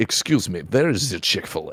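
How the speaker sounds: put-on Russian-accented speech. Retelling what tourists ask on the street: imitating a Russian tourist. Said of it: "Like that".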